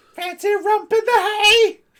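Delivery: very high, shrill, very loud fishwife holler. Despite another speaker objecting to it, doing a fishwife voice. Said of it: "No fishwife voice".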